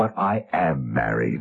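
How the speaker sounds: very low, slow, wide-eyed innocent ingenue voice. Describing a woman's routine, mimicking how she answered: mock ingenue voice. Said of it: "in her best ingenue voice said".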